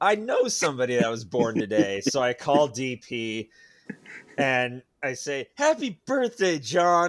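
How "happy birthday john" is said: play-acted bright, very chipper voice, pitched up. Retelling phoning John on his birthday, in a retold very chipper voice. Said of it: "in a very chipper voice".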